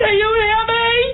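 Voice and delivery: high voice, called out as if across a distance. Asking the other speaker on the phone whether she is heard: shouting. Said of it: "You seem to be shouting".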